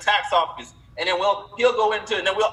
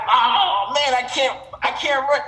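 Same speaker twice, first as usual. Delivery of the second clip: nervous stutter, words tripping and repeating; 4 semitones higher than usual. Speaker retells running into Mike, imitating Mike stuttering. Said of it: "This dude literally stuttering like Moses".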